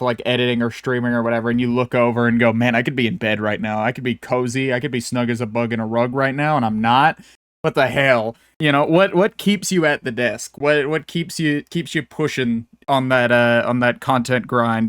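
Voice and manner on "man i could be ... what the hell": ordinary talk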